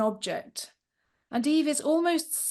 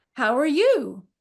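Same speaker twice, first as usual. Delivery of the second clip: put-on American accent, raised in pitch; 2 semitones higher, 5 dB louder than usual. Reading an account aloud, voicing Connie's greeting, in Connie's American accent. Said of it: "it's in an American accent for a reason".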